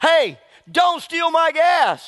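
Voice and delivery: very high, very slow, drawn-out holler. Retelling how someone at a gas station yelled at them, retelling a yell. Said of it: "just yells at me and says".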